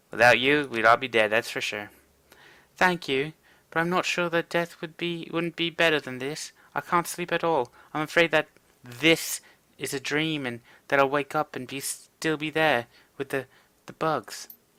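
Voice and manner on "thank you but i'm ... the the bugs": speaking with a put-on French accent. Voicing Marie Louise, a game character, in dialogue: French accent. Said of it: "I gave her a French accent".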